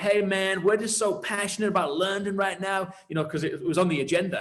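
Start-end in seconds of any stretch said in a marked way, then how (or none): 0.0-2.9 put-on higher-pitched American accent. Retelling phone calls from Americans about London, imitating an American accent. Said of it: "that's a great American accent".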